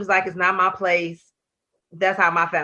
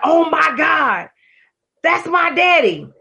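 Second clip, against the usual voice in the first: play-acted sudden high, loud, drawn-out scream; 9 semitones higher, 5 dB louder than usual. At the movies, retelling Nita's outburst, imitating Nita screaming. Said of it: "Nita screams like".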